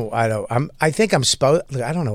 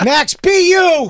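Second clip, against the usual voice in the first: high, slow, mock supportive cheering. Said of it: "We're like".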